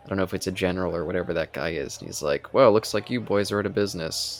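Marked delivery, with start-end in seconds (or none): none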